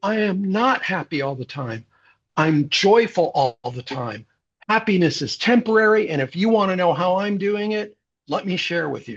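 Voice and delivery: proud and excited.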